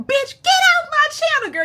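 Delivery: very high, shrill, loud screaming. Retelling screaming at the phone about a man on the channel: imitating own past screaming. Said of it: "I was screaming at the T V".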